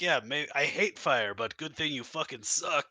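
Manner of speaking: jeering, taunting monster voice. Voicing a monster that flips the caster double birds: taunting monster voice. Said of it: "he flips you double birds and is like".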